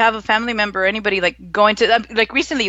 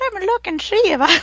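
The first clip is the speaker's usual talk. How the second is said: put-on pitched-up, high old man voice; 9 semitones higher than usual. Showing the other speaker how to do the voice: Family Guy old man voice. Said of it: "you should do your voice like a".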